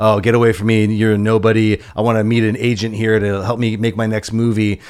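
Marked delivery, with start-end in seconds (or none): none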